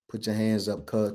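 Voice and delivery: low, flat, expressionless, level monotone. Retelling what a guy said to Jeremy as police demanded hands up, in a flat monotone. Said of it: "Like in the this monotone".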